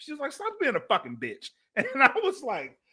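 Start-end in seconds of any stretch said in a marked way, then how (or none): 0.3-1.5 plain, unbothered, matter-of-fact tone. Speaker retelling what a woman told them, imitating a matter-of-fact tone. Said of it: "it was so matter of fact".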